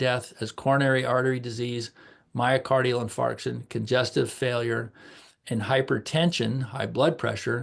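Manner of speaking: ordinary talk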